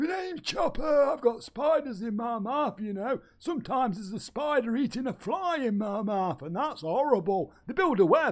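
high-pitched talking bear voice. Voicing Chopper, one of the bears, saying goodbye: Chopper the bear voice. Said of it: "It's freaking me out doing three voices".

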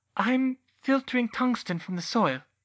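tiny, small, very high-pitched voice. She answers the centaur's question, in a small voice. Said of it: "she answered in a small voice".

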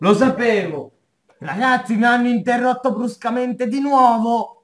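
fuming, fed-up complaint. A streamer, interrupted again while counting, tells the viewers, furious. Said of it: "Sono incazzato nero".

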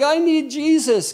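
high, tearful, broken-down crying, acted out. Acting out a broken sinner crying out to God: imitating a crying sinner. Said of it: "he's broken and he's crying and he's like".

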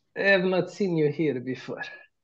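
put-on thick, heavy Russian accent with broken English. A role-playing game player speaks in character to strangers, in a strong Russian accent. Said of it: "with Russian accent. ... it is strong accent, ... You're a Russian, right? Almost".

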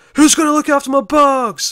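shrill, very high, loud yelled cry. Recounting the end of a bad scene, retelling the character's yell. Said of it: "where he yells out".

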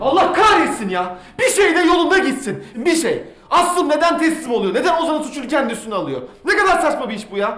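shouting. A character just told that someone close was arrested for a killing: shouting. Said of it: "Bağırma yeter".

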